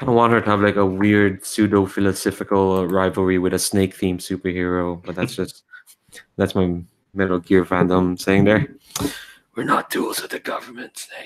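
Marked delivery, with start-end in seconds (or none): 9.6-11.3 rasping, breathy, whispered character voice. Voicing an imagined character's line to a snake-themed superhero, in a raspy voice. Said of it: "she's gonna have a, h- a raspy voice like that".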